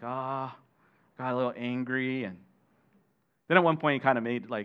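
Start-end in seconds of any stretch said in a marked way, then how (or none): 0.0-2.2 very slow, sheepish, humbled, embarrassed tone. Retelling a son's reply to his friends: imitating someone embarrassed. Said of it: "humble himself and embarrassed".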